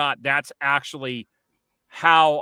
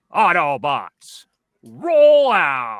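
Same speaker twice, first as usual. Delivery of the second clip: big, long drawn-out delivery; 7 dB louder than usual. Asked on the spot to do Optimus Prime, giving an Optimus Prime impression. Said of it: "Can you do that".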